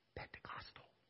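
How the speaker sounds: barely voiced, breathy, hushed whisper. Naming a word they couldn't use: whispered 'pentecostal'. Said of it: "I'm going to whisper this".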